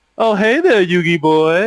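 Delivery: slow put-on voice, each word drawn out. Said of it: "I read it in that thing 'cause he always said Yugi boy in that".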